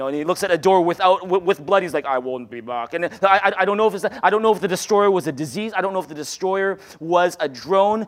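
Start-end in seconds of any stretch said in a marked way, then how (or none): 2.1-2.9 put-on Austrian accent, spoken slower. Describing a muscular guy with a big gun checking doors, speak in an Austrian accent. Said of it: "muscular guy with an Austrian accent".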